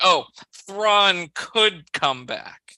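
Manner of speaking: arrogant, dismissive scoffing sneer. Acting out how he scoffed at the idea of Thrawn returning, mock-scoffing, dismissive. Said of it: "He scoffs at that too".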